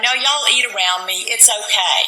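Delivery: ordinary delivery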